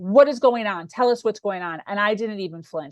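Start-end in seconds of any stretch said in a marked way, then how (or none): 0.0-1.8 acted-out loud, demanding yell. Retelling how a parent demanded answers: imitating dad yelling. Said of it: "my dad yells".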